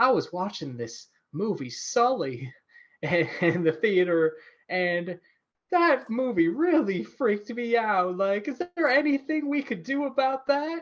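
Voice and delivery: put-on Southern accent. Retelling a woman's question to meditation instructors: imitating a Southern accent. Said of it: "I think she had a Southern accent".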